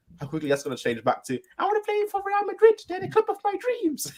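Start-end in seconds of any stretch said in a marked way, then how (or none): 1.6-4.1 mocking, very high-pitched cartoon voice. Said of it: "I love the Mickey Mouse voice you did".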